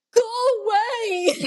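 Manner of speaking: put-on, very high, drawn-out scream. Retelling a moment in labor, imitating a scream at the top of her lungs. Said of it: "So I screamed at the top of my lungs".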